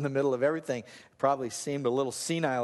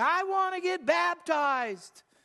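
very high, slow, drawn-out, acted-out child's yell. Recalling a six-year-old calling across the parking lot: retelling a child's yell. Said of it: "he's yelling at me".

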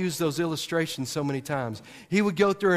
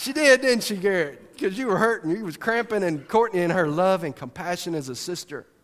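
ordinary talk, nothing marked

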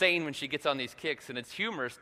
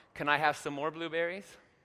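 soft, gentle put-on voice. Father retelling his daughter's request after a hug, imitating daughter asking softly. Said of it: "she'll say real softly".

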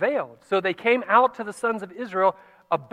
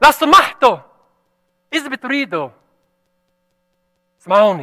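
slow, drawn-out loud yell; 3 semitones higher, 8 dB louder than usual. Showing what a player would have had to yell to be heard, yelling. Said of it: "would have had to do was yell".

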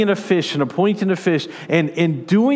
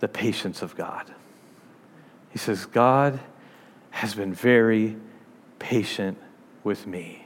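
put-on very weak, very low, broken-up, halting voice; 9 semitones lower, 7 dB quieter than usual. Retelling what a man answered him, the speaker imitates a very weak voice. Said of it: "In a very weak voice".

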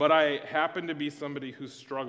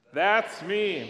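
loud, high shout in full voice; 5 semitones higher, 3 dB louder than usual. Leading a practice of the game's answer: loud shout. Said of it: "with a loud voice".

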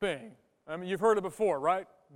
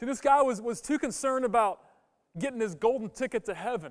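ordinary delivery

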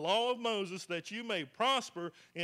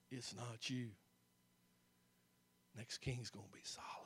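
weak, breathy, frail, whispery little voice; 9 semitones lower, 15 dB quieter than usual. Retelling the story of Adonijah and Solomon, acting out his reply in a little frail voice. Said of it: "His little frail voice".

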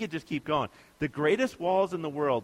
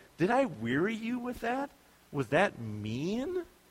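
slow, swooping sarcasm, God said sarcastically, mean drawn out; 5 semitones higher, 3 dB quieter than usual. Retelling God's words to the people after listing his deeds: imitating God, sarcastic. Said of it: "God's like".

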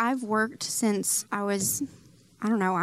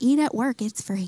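loud, scary, stern voice, snapped out. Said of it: "That was a scary Ann impression".

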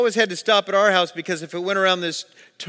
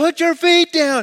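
acted-out yell; 11 semitones higher, 5 dB louder than usual. Retelling how a man shouted at the panicking speaker in water, retelling a scream. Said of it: "he screams out one more time".

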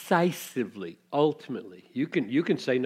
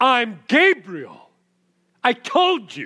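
furious scolding, very loud, high and drawn out; 10 semitones higher, 10 dB louder than usual. Retelling the angel's reply to Zechariah: acting out an angry angel. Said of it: "that's my tone of voice".

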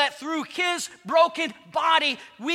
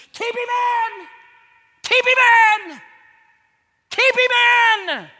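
furious, commanding shriek, shrill and loud; 8 semitones higher, 7 dB louder than usual. Picturing demons gathered around the tomb, the devil screaming in anger. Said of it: "the devil screams".

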